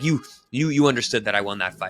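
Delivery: put-on adamant, insistent tone. Retelling how a fighter questioned everyone after the fight: imitating someone adamant. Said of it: "he was, like, really adamant".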